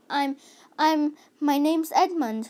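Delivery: awkward and ill at ease. Edmund, asked by the lady what he is, answers rather awkwardly. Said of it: "rather awkwardly".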